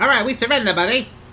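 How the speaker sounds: very high goblin voice. Narrating a scene, voicing the weaker goblins as they drop their clubs, in goblin voice. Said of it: "the goblin voice".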